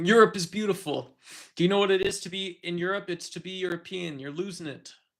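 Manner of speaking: high-pitched, mild half-shouting yell. Imitating Donald Trump yelling at a helicopter about Europe: Donald Trump impression, yelling. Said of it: "That's what he sounded like".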